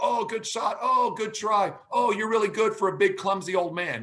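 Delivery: put-on friendly, kindly tone. Retelling an opponent's remarks during a badminton game: imitating a really nice tone. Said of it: "he's just being really nice".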